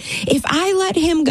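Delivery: play-acted screaming, high and drawn-out. Retelling a phone call with a man, re-enacting their own screaming. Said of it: "I'm screaming in the phone at this poor man".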